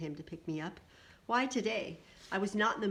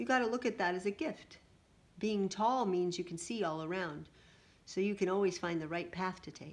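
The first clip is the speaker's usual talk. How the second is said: plain reading voice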